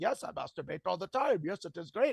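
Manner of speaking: heavy, thick put-on Indian accent. Retelling what a sex-education speaker told the class: imitating a thick Indian accent. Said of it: "he had a thick Indian accent".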